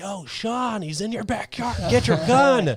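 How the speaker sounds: very loud, shrill, high, drawn-out yell. Retelling calling to a neighbor across the lake: imitating own yell. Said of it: "I start yelling at that neighbor".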